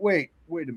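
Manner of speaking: ordinary delivery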